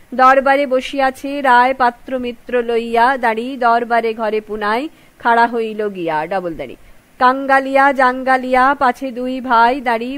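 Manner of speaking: usual speaking voice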